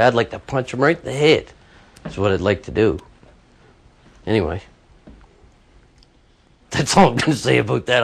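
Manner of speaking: choked-up voice catching with emotion. Speaking about someone affecting a landlady they care about: getting choked up. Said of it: "I'm getting choked up".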